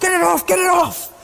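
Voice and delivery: high, loud, panicked shouting.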